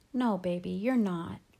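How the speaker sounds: ordinary delivery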